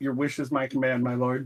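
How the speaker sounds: whispering in character voice. Playing a character whispering back a reply to a voice on the wind: whispering in character. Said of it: "gonna whisper back".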